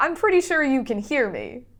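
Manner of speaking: calling out loudly. Playing a character who calls out to enemies who may hear: yelling out in character. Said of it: "I'm gonna yell out".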